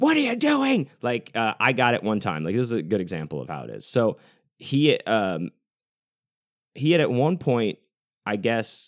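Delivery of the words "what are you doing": top-of-lungs, very high-pitched, shrieking scream. Describing a man who would suddenly snap, retelling a top-of-lungs scream. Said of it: "screaming at the top of his lungs".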